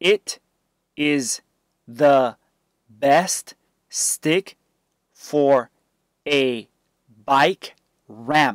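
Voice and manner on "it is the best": usual speaking voice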